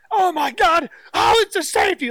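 put-on screaming man. Telling how a man watching football in a restaurant reacted, retelling someone screaming. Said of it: "kind of like screaming in the restaurant".

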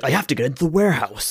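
full-on anime-dub announcer voice. Imitating a game's main character who sounds like the EA Sports guy. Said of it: "sounds like the fucking E A Sports guy".

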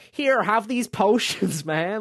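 loud, high, put-on American accent. Describing a blindfolded game character handing over potions, imitating an american accent. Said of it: "with an American accent that's just like".

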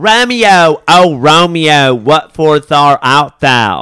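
fake, put-on Southern US accent. Imagining an amateur Romeo and Juliet, put-on Southern accent.

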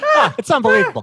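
very loud, shrill, high, belted dad voice. Asked to redo the dad impression: imitating dad like Bill Burr. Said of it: "can you do your dad impression again".

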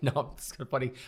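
talking through laughter. Speaking to the listener about close friendships: laughing. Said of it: "I'm laughing".

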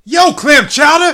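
very high-pitched, very loud shriek. Opening a recording by greeting everybody: screaming. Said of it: "Sorry for screaming in your ear there".

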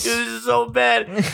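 put-on crying, high, tearful panicked voice. Retelling sending him videos while hurt and freaking out: mock-tearful, panicked. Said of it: "I have tears rolling down my eyes".

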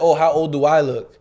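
ordinary talk

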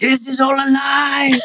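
very high-pitched, drawn-out shouting outcry. Retelling how mum shouted during the family story sharing: imitating mum shouting. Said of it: "my mum is just shouting".

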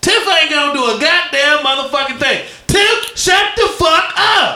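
very high-pitched, hard-swearing tirade. Telling a poet to stop interrupting: Samuel L. Jackson voice. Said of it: "I feel like Samuel L. Jackson of Pulp Fiction".

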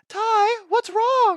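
kind, very high-pitched cartoon dinosaur voice. Quoting a kind dinosaur from a show he watched, in a high-pitched dinosaur voice. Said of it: "he had that really like high pitched voice".

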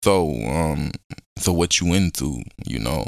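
put-on very deep, listless, flat monotone. Retelling how they used to fake talking to people: imitating own flat low-energy voice. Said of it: "ain't no energy in that".

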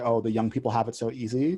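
ordinary talk, nothing marked

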